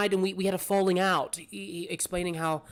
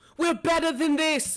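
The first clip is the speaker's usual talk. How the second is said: high-pitched screaming yell; 10 semitones higher than usual. Voicing a character screaming at her dead aunt: screaming at a corpse. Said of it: "she's screaming at the corpse".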